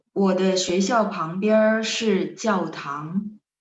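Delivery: slow, deliberate, carefully paced delivery.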